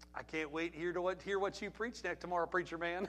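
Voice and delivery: mock kind, very kind-sounding tone. Retelling what a wife said to her yelling husband, imitating the kindest voice. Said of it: "just in the kindest voice".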